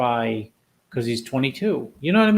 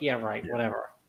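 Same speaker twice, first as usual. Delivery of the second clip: much quieter, put-on indifferent tone; 3 semitones lower, 10 dB quieter than usual. Recalling Levrone while others screamed at him: imitating Levrone's indifference. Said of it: "who could care less".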